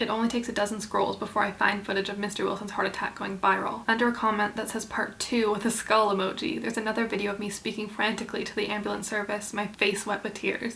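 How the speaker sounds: ordinary talk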